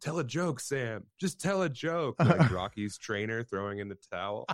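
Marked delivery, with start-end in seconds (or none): 0.0-2.2 very high, pleading yell from a distance. Retelling how someone yelled from the back of the room, retelling a yell. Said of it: "Joe was in the back of the room just yelling".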